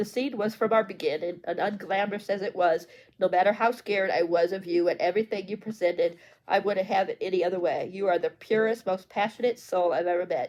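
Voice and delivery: ordinary talk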